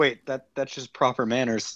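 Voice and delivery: normal talking voice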